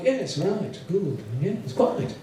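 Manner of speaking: put-on very posh, proper upper-class English accent. Imitating a very English man, very posh English accent. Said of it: "who speak in a very posh, proper nation. So it's all like".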